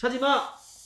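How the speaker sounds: rude, high, loud barked delivery.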